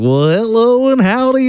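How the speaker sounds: odd put-on character voice, very high and slow. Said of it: "kind of like a weird, I don't know what that character voice is".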